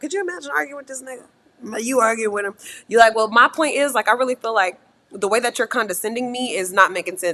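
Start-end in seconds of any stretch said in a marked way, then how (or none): none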